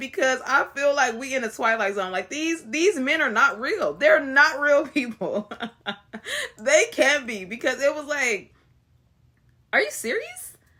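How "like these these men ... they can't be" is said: speech broken up by laughter. Calling some men unreal in disbelief, laughing while talking. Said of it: "I keep laughing".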